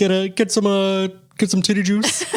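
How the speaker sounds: halting frog puppet voice. Asked for their best Kermit the Frog, the speaker gives it a try: Kermit the Frog voice. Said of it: "Is that your best Kermit the Frog?".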